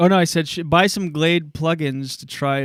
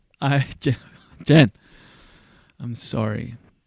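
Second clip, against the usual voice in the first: hollow, insincere, low, slow fake tone; 4 semitones lower than usual. Told the apology was not real, the speaker apologizes again: insincere apology. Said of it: "It still sounded fake".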